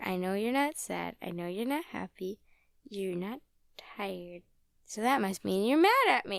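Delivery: acted-out, loud, as irritating as possible. Retelling what Birch says to the Poochyena: annoying imitation of Birch. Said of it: "In the most annoying way".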